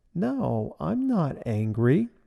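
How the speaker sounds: slow, very sweet, sugary, honeyed voice. Recounting what a woman said when told she gets angry; imitating a very sweet voice. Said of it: "She said in a very sweet voice".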